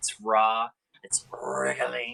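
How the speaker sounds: slow creature-like voice, each word drawn out. Quoting a line as a Lord of the Rings character would say it: Smeagol voice. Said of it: "like, uh, Smeagol would say".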